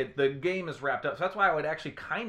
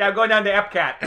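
very loud, high, put-on Chicago accent; 6 semitones higher, 11 dB louder than usual. After a co-host notes a Chicago accent creeping in, doing a put-on Chicago accent. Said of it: "You somehow put like a Chicago accent".

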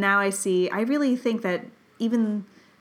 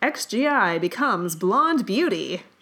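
put-on old-time radio announcer delivery. Saying a line like a 1950s headline, radio announcer voice. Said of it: "if you say them in a radio announcer's voice".

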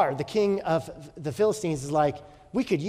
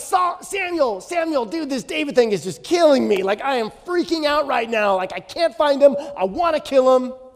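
frantic, panicky, loud, high freaked-out outpouring; 9 semitones higher, 5 dB louder than usual. Retelling Saul calling on Samuel: imitating Saul freaking out. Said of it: "He's freaking out over David".

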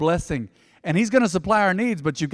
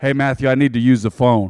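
hard, no-nonsense, loud dad voice; 6 semitones lower, 5 dB louder than usual. Recalling his dad wanting the phone while he talked: tough dad voice. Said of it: "Dad always had a tough voice".

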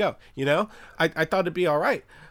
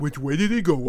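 put-on dumb dog voice, much lower; 4 semitones lower than usual. Critiquing someone's bad accent, demonstrating it with a dumb Looney Tunes dog voice. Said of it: "It's like that dumb dog in, like, a Looney Tunes".

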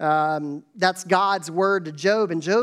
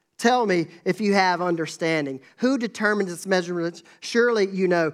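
usual speaking voice

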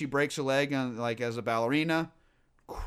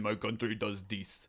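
put-on, low, soft Russian ballerina accent; 6 semitones lower, 9 dB quieter than usual. Retelling how a woman talked, in a Russian ballerina accent. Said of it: "she was talking like a Russian ballerina".

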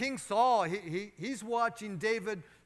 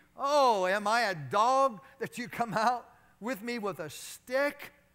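put-on, derisive, mocking and jeering taunt; 4 dB louder than usual. Telling the story, voicing the insulted enemy on the battlefield, retelling mocking banter. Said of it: "He banters mockingly".

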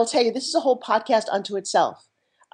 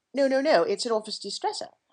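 ordinary talk

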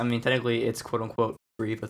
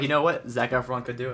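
ordinary delivery

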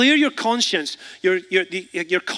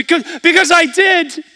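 put-on tearful, teary, very high little child's voice; 10 semitones higher, 7 dB louder than usual. Retelling a young child's answer after being scolded: imitating a tearful child. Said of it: "his eyes welled up".

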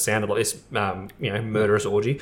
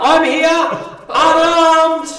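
mock scream, higher and louder; 9 dB louder than usual. Acting out the dumb character in a horror movie, imitating a character screaming. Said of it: "and he screams".

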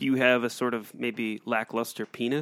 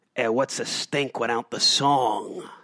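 loud, slow, gross New York guy character voice; 5 dB louder than usual. Showing the others a fart phrase: gross new york guy voice. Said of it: "put on the character of a gross guy, like a gross, maybe New York guy".

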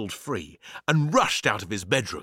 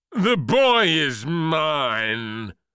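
booming, commanding, very slow, with "mine" stretched out; 5 semitones higher, 4 dB louder than usual. A giant rhubarb calls out from the roof of the house, booming. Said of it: "boomed the rhubarb".

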